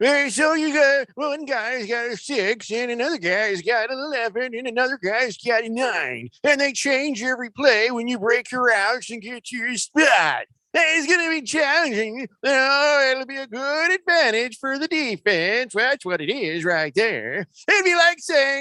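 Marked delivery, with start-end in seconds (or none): 0.0-17.5 put-on grumpy old man voice, pitched higher. Quoting a quarterback's complaint in that old man voice: imitating Tom Brady as an old man. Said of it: "I'll do it in that voice".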